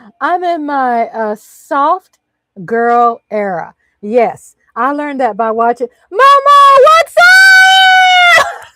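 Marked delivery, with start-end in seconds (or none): 6.1-8.5 shrill, very high, full-volume scream, rising, drawn out. Greeting Mama after hearing everyone, screaming. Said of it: "Sorry, I'm screaming".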